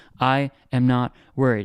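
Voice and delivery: slow, calm, unworried reassuring tone. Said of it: "hope you can hear it in my tone".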